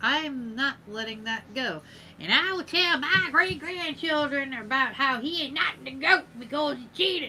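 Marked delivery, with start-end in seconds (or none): 2.2-7.3 put-on elderly woman's voice. Telling her future great-grandchildren about him, in an old lady voice. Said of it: "That was my old lady voice".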